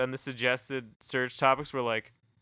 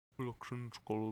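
put-on Dutch accent, dropping parts of words; 2 semitones lower, 11 dB quieter than usual. Showing how a Dutch accent changes words: Dutch accent. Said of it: "Thing about Dutch accents is you'll have to".

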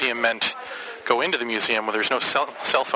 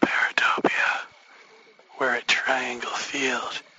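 whispering. At Triangle Field, not wanting to scare the ghosts: whispering. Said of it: "I'm whispering because I don't want to scare the ghosts".

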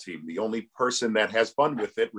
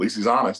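normal talking voice

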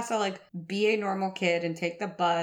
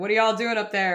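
imitated father voice, louder; 5 dB louder than usual. Retelling the dad hearing a bang upstairs: imitating a dad calling upstairs. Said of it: "my dad would just hear a bang and be like".

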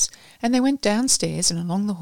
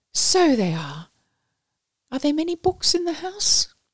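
cheery, lilting, high sing-song tone; 9 semitones higher than usual. Miss Clemson gets up, dusts herself off and speaks cheerfully to Miss Booth. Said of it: "said cheerfully".

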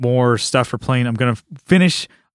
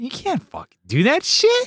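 very high-pitched voice swooping all over; 13 semitones higher than usual. Describing someone known since childhood, imitating Brian's high pitch. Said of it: "kind of will do the high pitch".

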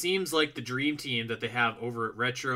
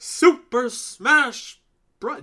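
very loud, shrill announcer shout, belted out; 12 semitones higher, 9 dB louder than usual. Urged by another speaker to say the game title properly, Super Smash Bros. announcer voice. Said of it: "it like the announcer".

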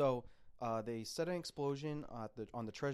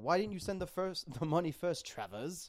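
clumsy, bad, put-on British accent; 4 semitones higher, 4 dB louder than usual. Quoting a movie character's line to another speaker: imitating a bad british accent. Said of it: "the bad British accent".

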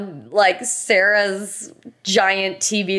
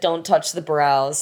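put-on forceful tone, lower; 4 semitones lower than usual. Retelling how the speaker went in with guns blazing: retelling a forceful demand. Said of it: "I went in with guns blazing and I said".

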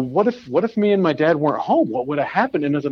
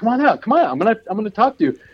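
mock, high-pitched screaming yell; 7 semitones higher than usual. Retelling confronting a guy in the neighborhood, reenact screaming at him. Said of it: "I'm screaming at him like a".

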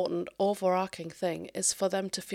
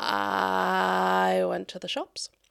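prolonged, drawn-out sound stutter, louder; 3 dB louder than usual. Explaining kinds of stuttering, the speaker demonstrates a prolonged sound stutter. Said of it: "sort of dragging it out".

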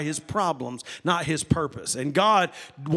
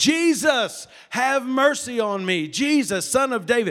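mock yelling, higher pitch; 6 semitones higher than usual. Retelling the story of blind Bartimaeus calling out to Jesus; imitating Bartimaeus yelling. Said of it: "He just kept yelling and kept yelling".

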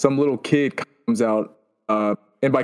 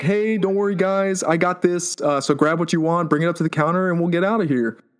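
calling out loudly; 5 semitones higher than usual. Voicing a character paying for everyone's snacks at the counter: yelling out to everyone. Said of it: "she kinda yells out to everyone".

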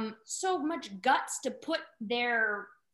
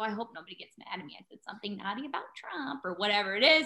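put-on nervous, worried, anxious fretting; 3 semitones lower than usual. Retelling getting anxious after dubbing something, quoting own past thoughts: retelling own anxious worry. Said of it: "and then I got anxious".

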